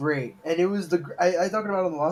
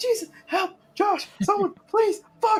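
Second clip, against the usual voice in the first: frantic, desperate, shrill and very high-pitched; 3 dB louder than usual. Retelling how a friend turns into a dramatic voice actor, mock panicked desperate pleading. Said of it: "turns into the 5-star voice actor".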